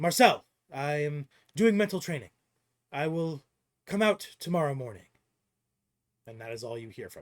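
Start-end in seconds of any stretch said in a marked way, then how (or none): 0.0-5.1 loud, called-out shouting yell. Voicing a character calling out from his room to a passing player: yelling. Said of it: "yells to you".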